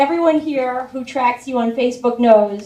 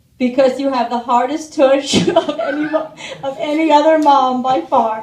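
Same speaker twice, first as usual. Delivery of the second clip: ordinary talk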